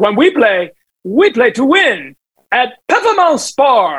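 put-on heavy, thick French accent, very drawn out, slow, high. Quoting a man's line from his ad: thick French accent. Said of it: "It was such a thick French accent. ... That's how he said Performance Sport".

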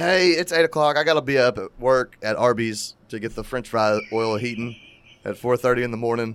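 ordinary delivery

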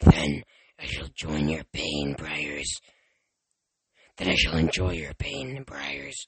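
monster voice, dropped very low. Tyson switches from one mimicked voice to the monster's voice. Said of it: "He switched to the monster's voice".

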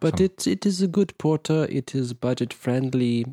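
put-on German accent. Reviewing a porter beer on a podcast: put-on German accent. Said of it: "What accent is this?".

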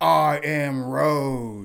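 loud, high, mock grand tone, road drawn out. Reading a news story aloud, retelling a man's declaration: imitating a loud declaration. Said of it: "loudly state".

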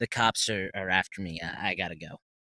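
ordinary delivery

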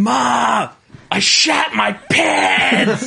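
mock very high, very slow, raspy, loud yell. Retelling a woman on the stairs calling to her mother: imitating someone yelling as loud as possible. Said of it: "as loud as she fucking can".

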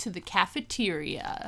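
play-acted smooth, breathy romantic tone. Retelling a character's invite to the cafeteria: imitating a romantic date invite. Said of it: "he's making it sound like they're about to go on a date".

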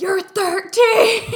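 shrill, very high, very loud screaming freak-out. Retelling how a guy reacts on seeing her ID, imitating Lucas freaking out. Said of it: "he's freaking out".

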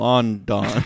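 "london" said in an odd, unusual way. Retelling a police scene where a telegram is read: saying London the Hot Fuzz way. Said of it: "reads it, like".

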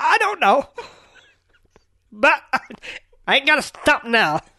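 high, loud grown-up nerd voice. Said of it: "grown-up Republican Steve Urkel".

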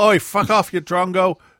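blunt, dismissive yelled outburst. Acting out how people in Australia might answer: imitating Australians yelling. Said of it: "I think they just yell".

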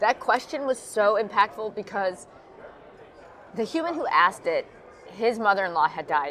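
emotional, tearful, close to crying. Talking about a viewer's question, tearing up. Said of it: "I'm like tearing up".

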